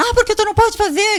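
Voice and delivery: shrill, very high, loud yelling. Retelling how a nurse reacted to the nebulization: imitating a nurse yelling. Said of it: "Gritando comigo".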